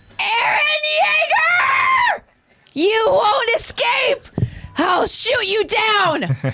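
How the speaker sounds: very high, shrieking scream full of disdain. Voicing Gabi as she runs after them with her rifle, screaming as Gabi. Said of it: "more screamy, higher than I wanted to".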